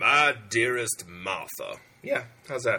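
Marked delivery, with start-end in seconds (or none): 0.0-1.8 slow, solemn documentary letter-reading voiceover. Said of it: "reading a soldier's letter voiceover voice?".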